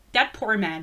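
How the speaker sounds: ordinary delivery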